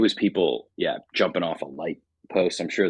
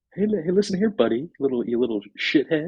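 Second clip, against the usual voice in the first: very high-pitched scornful delivery; 12 semitones higher than usual. Chatting about Succession, imitating Matthew Macfadyen's Tom talking to Greg, high-pitched impression. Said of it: "He just has this kind of high pitch".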